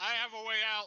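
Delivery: very high, very loud shout. Playing a character calling out an escape route: yelling in character. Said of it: "Irukul's just yelling back".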